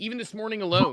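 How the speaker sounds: usual speaking voice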